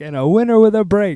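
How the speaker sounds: mock thrilled, very high-pitched, excited announcer voice. Retelling a blooper where the other speaker announced a winner, imitating an excited call. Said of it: "You were excited".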